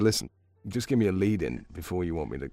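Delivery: plain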